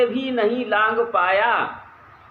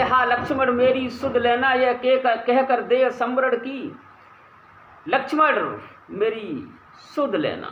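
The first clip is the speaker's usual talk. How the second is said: ordinary talk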